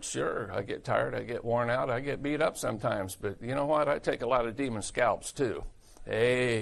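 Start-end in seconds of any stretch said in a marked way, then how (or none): none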